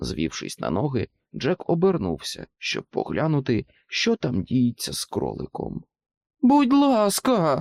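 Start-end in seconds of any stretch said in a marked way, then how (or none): 6.4-7.6 shrieking, very high pleading tone. A captured rabbit pleads with the things holding him: screeching plea. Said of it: "досі верещав той".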